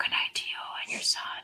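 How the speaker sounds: whispered, rattled off softly and quickly. In a chat about accents, the speaker suddenly says goodnight, whispering. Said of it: "I don't know why I'm whispering".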